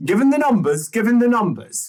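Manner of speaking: sharp, very high, loud irritated snap. Cutting in on the other speaker, the speaker is snapping. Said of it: "Sorry, I didn't mean to snap".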